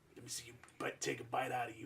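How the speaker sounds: very soft, hushed, murmured wrestler-style trash talk. Retelling an interview line aimed at Jake the Snake: Macho Man impression. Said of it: "It's like".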